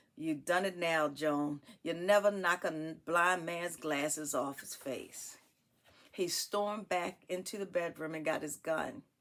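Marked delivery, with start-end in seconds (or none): none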